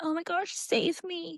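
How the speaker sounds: very high, soft, meek, timid, helpless cry. Mocking how timid heroines in similar books talk: mock timid plea. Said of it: "normally they're timid".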